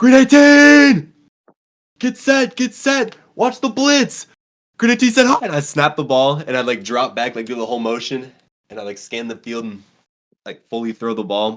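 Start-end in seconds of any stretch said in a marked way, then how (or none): 0.0-5.4 shrill, high, full-volume shout. Speaker reenacts playing a quarterback simulator in the room: retelling shouting a cadence. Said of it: "I'm like shouting out".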